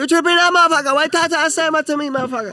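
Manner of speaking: very high mock Chinese accent.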